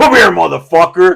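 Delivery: loud, barked yell projected across a distance. Retelling a superior calling out as the speaker walked away: imitating a superior yelling.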